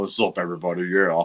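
deep, bassy, professional-sounding put-on host voice. Imitating another speaker's greeting: imitating a deep voice. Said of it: "It's a deep voice".

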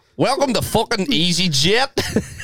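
put-on Belfast accent blended with a European one. Imitating a flight attendant's English announcement, Belfast-European mix accent. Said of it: "like a Belfast accent and some like European one".

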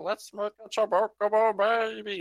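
very high, slow, drawn-out, silly weird voice. Retelling a line from a parody video, imitating a weird voice. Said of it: "they had the weird voice and everything".

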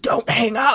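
eerie, unsettling, creepy voice. Retelling a strange phone call, quoting the caller: imitating a creepy voice. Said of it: "And in his creepy voice".

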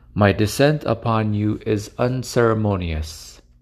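ordinary talk, nothing marked

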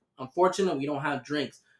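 ordinary talk, nothing marked

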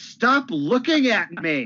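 very high, slow, stretched-out yell. Speaker retells what a man yelled at his wife, imitating someone yelling. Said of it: "You know what he's yelling?".

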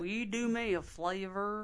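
put-on Southern accent. Saying the disliked cliché phrase aloud: put-on southern accent. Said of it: "don't do the Southern accent".

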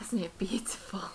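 soft, hushed half-whisper spoken quickly. Running with a companion near a loud cavern, speaking while whispering. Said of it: "I'm also kind of whispering".

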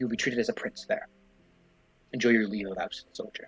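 hushed, soft, close half-whisper. A lord sends a soldier home, half-whispering into the soldier's ear. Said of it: "he actually whispers into your ear".

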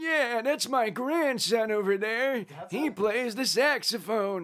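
put-on elderly voice, high and slow. Showing off their best impression, an elderly person: old person voice. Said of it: "the best impression I have is like an old person".

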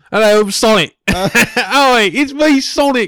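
very high, loud British accent, "it's" drawn out. Joking about casting an actor as Sonic, the speaker does Sonic with a British accent. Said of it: "Sonic with a British accent".

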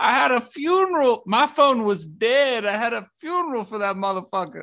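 put-on high-pitched Southern accent. Comparing two actors' performances, mimicking one of them: Jonah Hill Southern accent impression. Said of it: "Jonah Hill's Southern accent is just fucking hysterical".

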